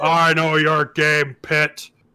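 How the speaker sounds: yelling angrily. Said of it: "So I'm just yelling at the pit now".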